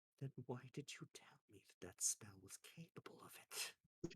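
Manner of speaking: very quiet, barely-there whisper. Voicing a character who turns to question a player: quietest voice possible. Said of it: "in the quietest voice possible".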